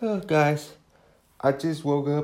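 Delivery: yawning while talking. Podcast host who just woke up greets listeners: yawning. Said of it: "Sorry for the yawning".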